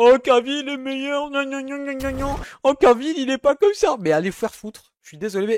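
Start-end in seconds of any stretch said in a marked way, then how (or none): 0.0-4.0 high, loud, whiny, mocking voice. Playing a hater complaining about the film: mocking a hater's whiny voice. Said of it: "Imaginons, je suis un rageux".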